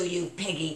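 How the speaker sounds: soft, laughing, mocking taunting tone. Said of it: "I'm into mocking you".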